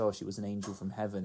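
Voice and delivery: ordinary talk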